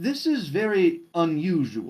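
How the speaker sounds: odd, mysterious, slow, drawn-out strange voice. Voicing a strange voice that speaks by a player's ear: strange voice by the ear. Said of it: "you hear a strange voice by your ear".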